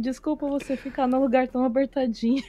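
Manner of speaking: gentle, soft, tender, affectionate doting murmur. Retelling how the villain's assistant spoke while caressing him: imitating someone caressing, speaking tenderly. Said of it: "ela ficava acariciando e falando assim".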